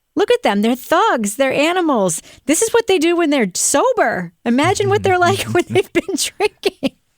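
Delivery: teasing, mocking voice. Retelling what someone said to a crowd: mocking gaslighting tone. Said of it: "doing that hilarious gaslighty thing where he's like".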